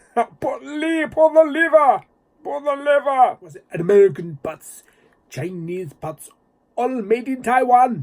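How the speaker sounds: very high, loud, bad put-on Russian accent. Recalling the Russian character from a film, bad Russian accent. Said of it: "that is not a good Russian accent".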